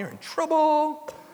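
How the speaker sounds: very high, scolding motherly voice. Addressing believers, the speaker repeats a phrase imitating the speaker's mom. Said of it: "I tried to say it like my mom".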